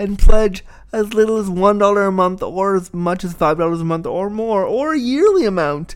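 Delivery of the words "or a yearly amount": sudden squeaky puppet-like voice. A podcast host reading a Patreon plug, voice slipping to sound like a Muppet. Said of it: "I sound like a Muppet".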